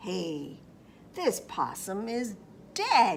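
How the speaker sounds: low, loud, snarling animal-like growl. Narrator voices a critter that finds a possum, snarling. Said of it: "it snarled".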